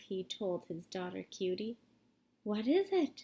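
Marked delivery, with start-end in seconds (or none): 2.4-3.2 breathless, short of breath. Reading the daughter's question to her father in a story, breathless. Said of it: "she asked breathless".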